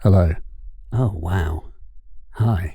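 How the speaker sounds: low radio announcer voice. Testing a new microphone, the speaker says hello in a radio voice. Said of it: "I'm turning on my radio voice".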